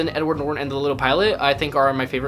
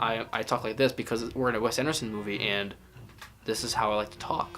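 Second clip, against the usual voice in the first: stilted, wooden, emotionless deadpan, low and soft; 4 semitones lower, 8 dB quieter than usual. Speaker critiquing a director's style by mimicking its dialogue: Wes Anderson deadpan dialogue. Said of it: "Still to dialogue, no emotion".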